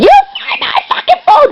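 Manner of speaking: very high-pitched mild yell, near screaming. Retelling the mom screaming to find her phone: imitating someone screaming. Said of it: "screaming at me at the top of her lungs".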